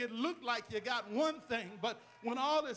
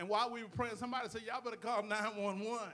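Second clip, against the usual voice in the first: ordinary talk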